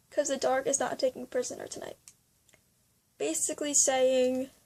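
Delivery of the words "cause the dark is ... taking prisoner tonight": usual speaking voice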